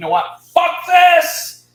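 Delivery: very loud, very high, done-with-it furious explosion. Retelling walking out of a store: retelling own angry outburst. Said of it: "I'm pissed".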